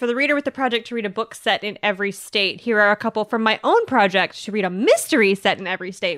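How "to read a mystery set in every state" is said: ordinary talk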